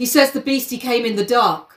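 normal talking voice

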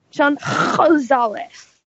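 high, slow, stretched-out mock Yiddish accent. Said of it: "Kevin just took you straight to a shtetl".

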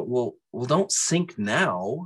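slow, unhurried, lightly sarcastic mocking drawl. Retelling a conversation with Christ: sarcastic voice of Christ. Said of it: "the voice of Christ to me was a little on the sarcastic side".

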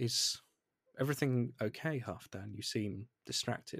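quite gentle, soft tone. Game master voices Melista checking on a player's character, gentle voice. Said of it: "looks at you in quite a gentle voice and says".

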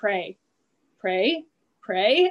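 eerily calm, steady, controlled, scary voice. Retelling how her mom spoke as the car fishtailed; imitating a scary calm voice. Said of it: "my mom got that like scary calm voice".

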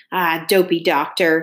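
with a snort. A father answering his son about the doctor, snorting. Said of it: "my father snorts".

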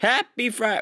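high, cracking voice breaking mid-word. Host greeting listeners at the start of the show, voice cracking. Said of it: "my voice just cracked".

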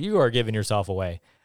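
usual speaking voice

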